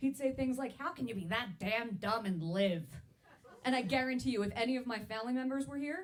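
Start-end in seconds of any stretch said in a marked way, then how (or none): 0.8-2.8 put-on mean, cranky, grumpy old man voice. Retelling what a grandfather used to say: impression of grandfather Pop-Pop. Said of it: "impressed with my Pop-Pop impression".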